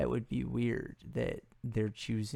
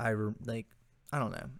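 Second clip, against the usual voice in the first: usual speaking voice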